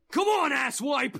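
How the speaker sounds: over-the-top anime-style yell. Reacting to the scene, a listener demonstrates a Dragon Ball Z-style shout. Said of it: "that too".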